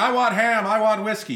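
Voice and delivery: shrill, shrieking, screaming ventriloquist dummy voice. Pitching a promo of a child dressed as a ventriloquist dummy, screaming ventriloquist dummy voice. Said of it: "how ventriloquist dummies scream".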